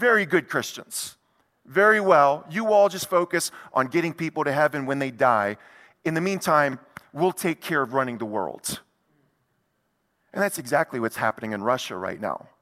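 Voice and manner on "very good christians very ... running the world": normal talking voice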